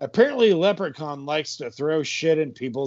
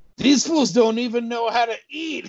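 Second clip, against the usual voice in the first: pitched-up put-on cartoon leprechaun voice; 8 semitones higher than usual. Voicing a character during a narration: put-on leprechaun voice. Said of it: "I want to do a Leprechaun voice".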